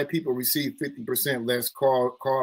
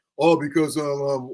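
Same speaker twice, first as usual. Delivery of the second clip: stumbling, hesitant put-on voice with ums; 3 dB louder than usual. Retelling what a student used to say, imitating Student X's voice. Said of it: "I shouldn't do his voice like that".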